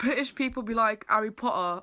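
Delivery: ordinary delivery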